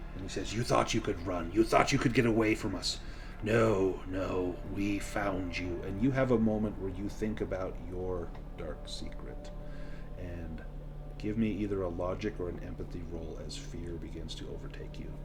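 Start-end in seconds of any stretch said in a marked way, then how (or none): 0.5-5.8 spoken in a hiss. Game master voicing a man speaking to the player's character, hissing. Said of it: "kind of hissing at you".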